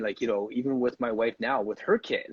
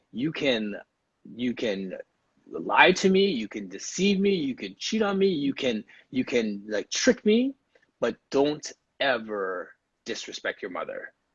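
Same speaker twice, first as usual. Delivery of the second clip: put-on stern, firm fatherly voice. Recalling the father's words to the speaker and brother, imitating father's stern voice. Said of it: "he said it in such a stern voice".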